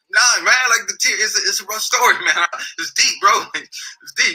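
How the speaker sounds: very high, teary, crying voice. Retelling answering a man who asked what was wrong; retelling tearful words. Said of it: "start crying".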